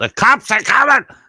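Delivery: high, loud, alarmed yelling. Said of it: "you yell out".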